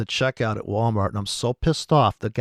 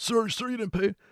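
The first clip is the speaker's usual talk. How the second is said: mock panicky, frantic shout, very high; 11 semitones higher, 5 dB quieter than usual. Retelling how the store staff member was freaking out: imitating someone freaking out. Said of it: "She was freaking out".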